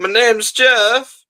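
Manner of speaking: put-on very high voice of a five-year-old child. Guessing how a man in a film would sound, in a five-year-old child voice. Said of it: "he would sound like a five year old trying to say".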